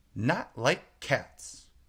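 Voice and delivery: shrill, impassioned, offended squealing mouse voice. Reading a story aloud, voicing the mouse answering Alice in a shrill, passionate voice. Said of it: "cried the mouse in a shrill, passionate voice".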